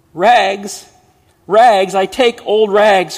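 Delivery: very loud, high-pitched sobbing cry. In a narrated story, the bleeding ragman calls out: crying out while sobbing. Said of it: "cried the sobbing, bleeding".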